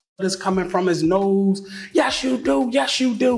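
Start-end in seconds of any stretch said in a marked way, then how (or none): 2.0-3.4 high, tearful, sobbing voice, acted out. Retelling an argument in which the other person kept insisting: imitating someone crying. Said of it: "So he crying".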